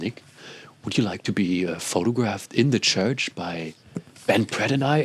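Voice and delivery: very soft, quiet, soft-spoken voice. Retelling what Linus said when he came to the speaker, imitating Linus speaking very softly. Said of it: "he was speaking very softly".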